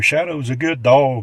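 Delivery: put-on Southern-accented voice. Recounting a visit to a property, quoting a woman in her southern accent. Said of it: "in her southern accent".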